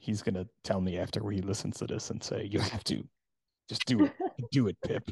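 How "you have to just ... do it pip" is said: put-on, swooping North Jersey accent. Predicting what a man will tell her after hearing this, the speaker quotes him in a North Jersey voice. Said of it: "in his North Jersey voice".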